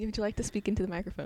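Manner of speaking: quiet, hushed, soft-spoken, low-key. Speaking while others nearby hold a conversation, talking quietly. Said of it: "Why are you talking so quiet?".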